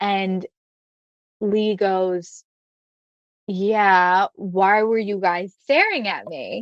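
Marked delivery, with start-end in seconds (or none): 3.5-6.6 put-on New Jersey attitude. Retelling how Lee answered when asked her name: imitating Lee with a little Jersey attitude. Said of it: "got, like, a little Jersey attitude".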